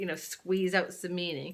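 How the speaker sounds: ordinary delivery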